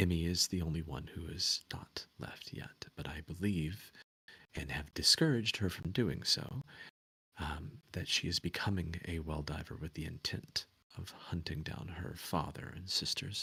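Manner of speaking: very hushed voice. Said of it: "very hushed".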